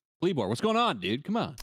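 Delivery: hyped, excited, pumped-up shout.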